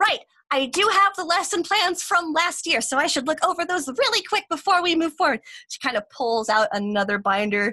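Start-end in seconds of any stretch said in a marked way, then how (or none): 0.0-5.4 bright, excitable, eager voice, pitched up. Game master voicing a newer teacher speaking to the class, excited new teacher. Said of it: "You see her kind of walk in just kind of excitedly. She's one of those newer teachers".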